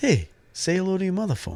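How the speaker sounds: very high, swooping put-on voice. Doing a quick impression after the other speaker mentions one: Mark Wahlberg impression. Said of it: "a Mark Wahlberg impression".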